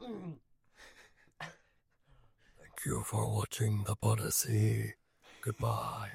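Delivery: eerie, high, spooky put-on ghostly voice. Podcast host says goodbye to listeners for the sign-off in a spooky voice. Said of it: "Spooky voice".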